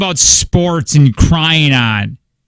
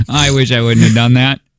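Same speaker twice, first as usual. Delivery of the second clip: ordinary talk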